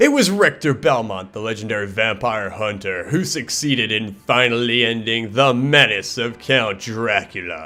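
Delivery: grand, dramatic, very theatrical storybook reading voice. Reading the game's dialogue intro aloud in a very theatrical voice. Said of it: "in a very theatrical voice".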